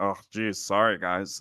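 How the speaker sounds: casual, slow, drawn-out delivery. Retelling how a podcast guest returns late: imitating Gingy apologizing. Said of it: "he's like".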